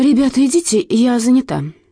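trembling voice. Pestered by three classmates, a girl answers them: trembling voice. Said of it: "дрожащим голосом проговорила она".

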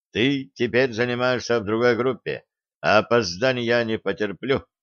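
plain

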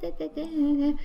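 put-on affected voice, high-pitched gibberish babble.

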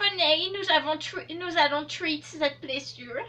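high, slow, concerned voice in an English accent.

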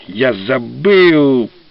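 scornful, contemptuous, drawn-out voice. Narrator reading a character's reply in a novel, contemptuous. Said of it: "презрительно произнес Дапонте".

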